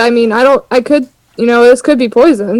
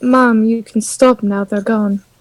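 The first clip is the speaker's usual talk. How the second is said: gentler than usual, soft, calming tone; 5 dB quieter than usual. Speaking in character to a mother crouched over a frozen boy: softer tone than usual. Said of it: "her tone is, like, a little bit softer than what she normally would say".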